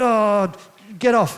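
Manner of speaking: put-on grumpy kid voice. Retelling how the youngest kid acts when sent to bed: imitating Jed being mad. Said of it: "he's real mad about something".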